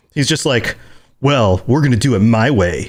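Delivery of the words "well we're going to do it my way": put-on pissed-off male character voice, mock-angry. Describing a game character who sounds pissed, imitating him pissed off. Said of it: "He sounds pissed".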